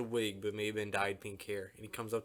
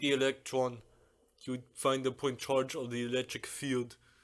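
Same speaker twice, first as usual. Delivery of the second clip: clichéd put-on Russian accent; 2 semitones higher, 3 dB louder than usual. Imitating a man with a Soviet background, stereotypical Russian accent. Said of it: "Why you sound like the fucking Terminator?".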